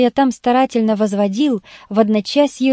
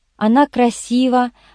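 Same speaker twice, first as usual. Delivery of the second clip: ordinary delivery, nothing marked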